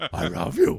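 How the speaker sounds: high, ape-like monkey voice. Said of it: "but in more monkey voice".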